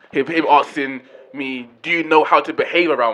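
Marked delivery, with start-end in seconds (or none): none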